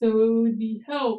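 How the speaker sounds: ordinary delivery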